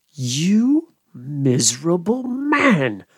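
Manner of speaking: utterly scornful, heavy contempt, the word "man" drawn out. The goblin turns on Gabriel Grubb, with excessive contempt. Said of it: "said the goblin in a tone of excessive contempt".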